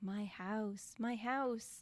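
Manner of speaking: put-on creepy old man's spooky whisper. Retelling a scary scene where an old man is heard: imitating an old man's creepy whisper. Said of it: "they hear this old guy going".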